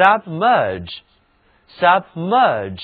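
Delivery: slow submerge, stress on second syllable merge.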